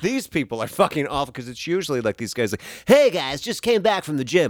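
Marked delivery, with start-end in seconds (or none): 2.9-4.5 weird put-on influencer voice, affected, high, loud. Mocking the guys on a page they looked at, imitating a weird affected voice. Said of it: "They all have like this weird like affected".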